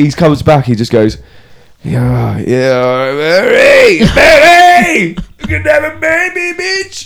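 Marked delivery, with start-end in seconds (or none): 1.8-7.1 put-on drunken slur, very high, very slow. Acting out a drunk man coming back from the pub: drunk voice. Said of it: "so he's pretty pissed".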